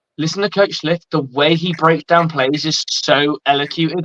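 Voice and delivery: ordinary talk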